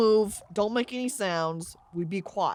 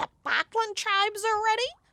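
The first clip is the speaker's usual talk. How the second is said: very high, hissed goblin voice; 12 semitones higher than usual. Narrating a story, voicing the first goblin general, hissing goblin voice. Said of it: "The first goblin general hisses".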